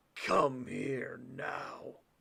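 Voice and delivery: deep, rough, throaty guttural voice. Reading a story aloud, the narrator voices the shrinking wolf: guttural voice. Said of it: "a guttural voice came from him".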